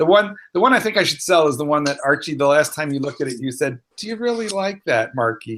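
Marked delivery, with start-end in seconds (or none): 4.0-5.6 play-acted wounded, hurt, worried, concerned, pitched up. Speaker quotes what the listener once said about an item: imitating a hurt tone. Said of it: "And you sounded hurt".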